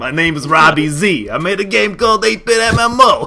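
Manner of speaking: put-on New York accent. Introducing the game as its creator when asked: New Yorker accent imitating Robbie Z. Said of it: "a New Yorker accent just like that".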